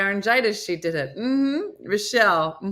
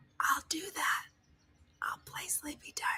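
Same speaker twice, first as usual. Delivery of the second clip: soft, hushed, barely voiced whisper; 7 semitones higher, 16 dB quieter than usual. Retelling how the voice assistant answered in bed: imitating a whispering voice assistant. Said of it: "She whispered back to me".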